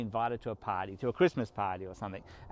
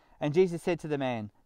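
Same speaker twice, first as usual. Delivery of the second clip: normal talking voice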